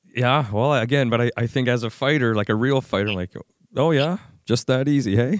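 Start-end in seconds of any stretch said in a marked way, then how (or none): 3.8-5.4 put-on, mildly sarcastic, jabbing tone. Reacting to a fighter's advice to just calm yourself: a little sarcastic. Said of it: "I'm being a little sarcastic".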